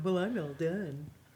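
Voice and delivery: mock self-satisfied, slow, drawn-out smug voice. Teasing the other speaker about finishing shopping early: imitating someone being smug. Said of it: "trotting around here all smug going".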